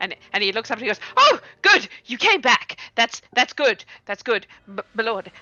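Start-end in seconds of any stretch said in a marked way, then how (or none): 1.2-5.3 nervous, jittery, much slower. A guard trying to stay on watch greets the party coming out of the forest, nervous guard. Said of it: "he's very nervous about it".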